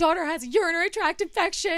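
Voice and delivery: crying pleading voice. Retelling begging a rebooking agent on the phone: imitating own tearful begging. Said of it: "I'm crying again".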